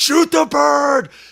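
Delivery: very high, raw, rough scream at full force. Retelling a shooting outing when a bird flew across, retelling a scream. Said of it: "and we are screaming".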